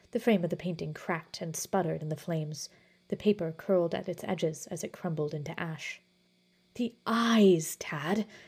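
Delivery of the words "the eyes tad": spoken as a hiss. A man answers another man's question as a painting burns, hissing. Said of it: "hissed Basil".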